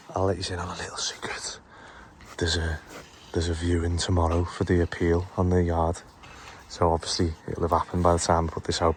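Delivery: low, hushed whisper. Letting the viewers in on a little secret, whispering. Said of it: "I'm whispering because there's there's snitches".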